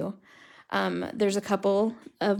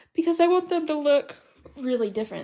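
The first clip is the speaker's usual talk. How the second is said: words pushed out mid-yawn, pitched up; 7 semitones higher than usual. Speaker demonstrating marker coloring to viewers, yawning while talking. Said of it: "Sorry, I'm yawning".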